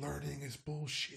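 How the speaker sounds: barely there, very soft, very quiet faint whisper. Voicing a dying book that speaks to a player: whispering. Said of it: "it whispers to you".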